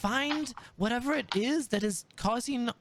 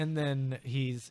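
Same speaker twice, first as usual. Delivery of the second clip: ordinary talk, nothing marked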